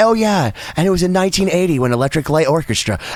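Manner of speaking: very calm, easygoing, completely relaxed tone. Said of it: "very calmly be like".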